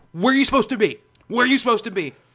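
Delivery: high, screaming, bawling yell. Retelling a traffic court guard screaming at an elderly woman: imitating a guard yelling. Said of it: "this one guard was yelling, like, screaming".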